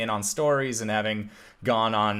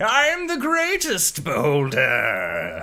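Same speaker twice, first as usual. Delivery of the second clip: loud, swooping, boastful monster voice; 5 semitones higher, 5 dB louder than usual. Narrating a monster advancing on the group, voicing it: boastful monster voice. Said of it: "Just talking itself up".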